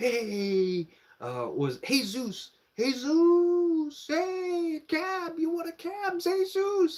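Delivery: very high, very slow, drawn-out sing-song hawking calls. Retelling getting off the plane and being called to: imitating Mexican cab drivers. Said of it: "Mexicans like".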